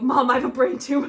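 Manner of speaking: crying out loudly through tears. Retelling running to mom crying: imitating own past crying. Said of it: "I run out to my mom crying".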